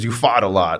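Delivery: put-on strong, thick New York accent. Quoting his strength coach, in a thick New York accent. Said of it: "he's got a thick New York accent".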